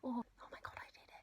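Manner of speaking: soft, hushed whisper under the breath. After saying bye to viewers at the end of a video, whispering.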